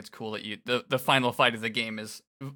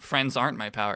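ordinary delivery

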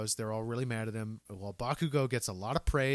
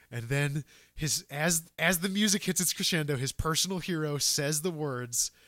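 usual speaking voice

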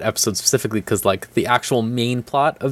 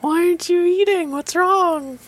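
much higher, mock worried, fussing nagging. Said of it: "everyone always has to ask you".

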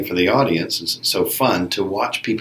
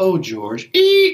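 put-on romantic delivery ending in car screech sound, higher; 11 semitones higher, 3 dB louder than usual. Retelling an actor's romantic last line that ends as a car screech. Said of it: "she makes the sound of a car screeching".

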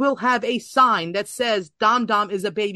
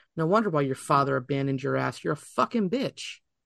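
ordinary delivery

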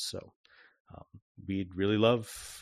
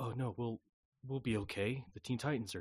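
whispering, much quieter; 7 dB quieter than usual. A game master voicing people on the towers talking to each other, whispering. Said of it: "people kind of whispering to each other".

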